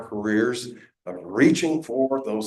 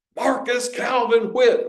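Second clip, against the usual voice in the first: put-on shouting, pitched higher; 12 semitones higher, 4 dB louder than usual. Retelling how granddad called up the tree: imitating granddad shouting. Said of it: "my granddad shouts".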